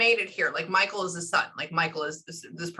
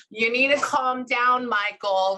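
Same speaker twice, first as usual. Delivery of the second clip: high, drawn-out yelling voice; 6 semitones higher, 4 dB louder than usual. Retelling what a woman yelled in the speaker's ear: imitating someone yelling. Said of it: "somebody yelling in my ear".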